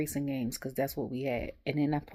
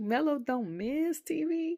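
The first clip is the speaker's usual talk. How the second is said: high, slow, incredulous disbelief. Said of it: "And I was like".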